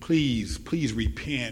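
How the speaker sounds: imploring, pleading, begging tone. Imagining a figure at the River Jordan urging people, in mock-pleading tone. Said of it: "What if his tone was more of a pleading tone? What if down at the River Jordan he was pleading".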